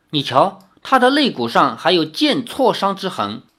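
plain

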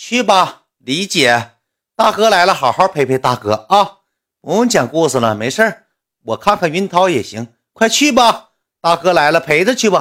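sly, passive-aggressive, high, drawn-out snide sarcasm. Speaker retells the guys' reply when she asked for time off, mimicking a snide sarcastic tone. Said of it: "阴阳怪气的".

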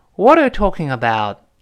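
ordinary talk, nothing marked

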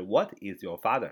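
ordinary talk

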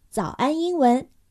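normal talking voice

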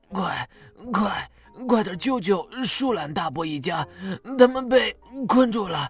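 feeble, faltering, trembling, breathless, struggling voice. An anteater, struggling, speaks to the rescue-team children: weak, trembling, struggling voice. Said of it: "颤巍巍的挣扎着，有气无力地说".

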